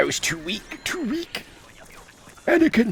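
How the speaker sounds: goofy, comically weakened villain voice, pitched high. Imitating a film villain pleading while being killed: feeble Palpatine voice. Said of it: "Palpatine being murdered by Mace Windu popped into my head".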